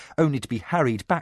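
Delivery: plain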